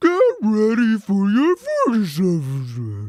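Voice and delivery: very loud, belted, swooping, wavy whale-speak. Speaker repeats the line the others just said, as Dory pretending to be a whale. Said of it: "slowly turns into Dory pretending to be a whale".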